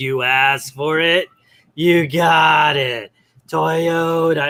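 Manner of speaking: put-on very slow, drawling elderly old man voice. Quoting an actor's repeated line from a movie with Billy Crystal: old man voice. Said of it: "there's this old man ... talks like this".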